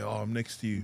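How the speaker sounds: ordinary talk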